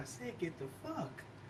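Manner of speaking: very quiet, hushed whisper under the breath. Retelling what a son said after being asked again: imitating son whispering. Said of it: "and then he whispers".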